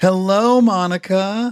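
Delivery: very high, squeaky voice. Greeting the person who is here to give him the facts, his voice very high-pitched. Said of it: "my voice went really high there".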